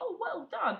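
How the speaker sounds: very high, pleased, happy voice. Explaining how to talk to a dog, showing the voice for things you like: nice praising voice. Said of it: "that voice for stuff you do like".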